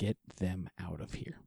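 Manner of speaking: close, secretive, hushed half-whisper. Voicing a stranger who approaches a player in a fire: half-whispering in someone's ear. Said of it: "approaches and whispers in your ear".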